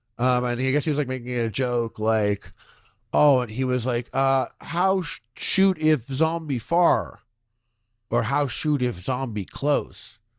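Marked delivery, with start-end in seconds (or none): 4.2-10.2 put-on caveman cadence, much slower. Describing a video at a firing range, imitating a man's caveman cadence. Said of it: "they spoke in like a caveman cadence".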